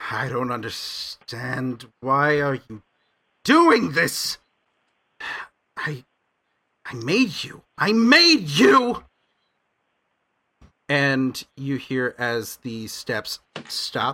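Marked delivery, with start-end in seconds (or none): 0.1-9.0 put-on loud, swooping grumble in old gnome man voice. Game master voicing an older gnomish man chained to a wall, grumbling. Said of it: "kind of grumbling you hear as he just says".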